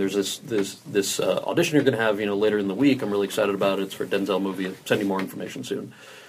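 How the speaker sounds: ordinary talk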